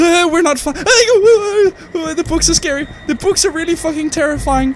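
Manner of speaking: high, loud, mock panicked whimpering.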